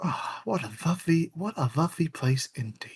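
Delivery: soft, pointed mutter under the breath. A player's character walking past staring wolves: muttering to oneself. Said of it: "say this low enough so that I'm obviously saying it to myself".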